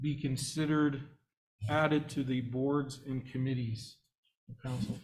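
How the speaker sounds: very slow, word-by-word delivery with long pauses.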